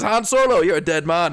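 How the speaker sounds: put-on accent, not quite Irish. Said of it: "walks out with another fantastic accent".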